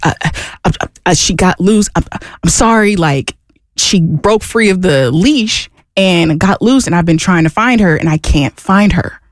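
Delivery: flustered stammer, stumbling and tripping over words. Retelling a boyfriend's excuse after losing the dog: imitating someone stumbling over words. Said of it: "stumbling over his words".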